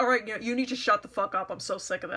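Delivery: put-on sharp snapping tone. Retelling what they said to another person over the purse, retelling snapping at her. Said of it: "I snapped".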